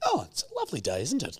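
play-acted, high, breezy, chirpy, chilled-out, too-calm voice. Retelling mum driving to hospital: imitating mum acting too calm. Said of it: "she was trying to be too calm".

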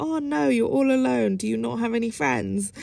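play-acted, playful, teasing, joking tone. Recalling a guy in a club who teased the speaker, imitating his jokey tone. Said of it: "it in a jokey way where he was like".

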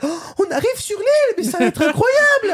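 high-pitched voice swooping in pitch. Imitating Peach's English voice from Mario Sunshine. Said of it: "la voix de Peach en anglais".

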